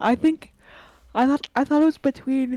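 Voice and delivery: loud words spoken through a yawn. Mid-conversation, the speaker talks through a yawn, then apologizes for it. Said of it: "sorry, I'm yawning".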